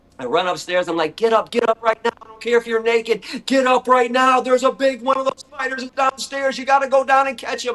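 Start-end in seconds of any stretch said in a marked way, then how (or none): 1.2-7.8 acted-out very high-pitched, frantic, panicked urging. Retelling waking someone to catch a big spider downstairs, retelling a panicked plea. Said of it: "I'm freaking out".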